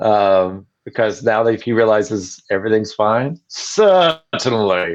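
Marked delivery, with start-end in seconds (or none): 3.5-5.0 put-on relieved English accent, higher. Trying the line the way the actor said it: bad Tim Curry impression. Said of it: "See, it's terrible".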